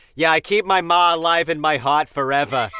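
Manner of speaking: thick, heavy Boston accent, very loud. Imagining a man talking about being zen: thick boston accent. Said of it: "a really thick Boston accent".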